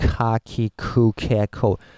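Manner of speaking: every syllable ka, ki, ku, ke, ko stressed hard. Japanese lesson on a learner habit: stress on each of ka ki ku ke ko. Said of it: "you feel you have to put accent on each of them".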